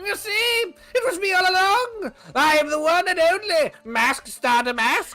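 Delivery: put-on goblin character voice. Voicing a character in a group story game: Mask Star Damask goblin voice. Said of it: "you gave Mask Star Damask the goblin voice".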